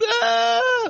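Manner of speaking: put-on very high, squealing little-girl scream. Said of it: "the little girls going".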